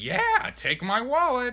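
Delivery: high pitched, loud, overeager, yielding tone.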